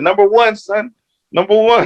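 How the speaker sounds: put-on very high-pitched, happy-sounding New York accent. Retelling his mom's happy reaction to the draft: imitating mom's New York accent. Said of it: "She got a New York accent".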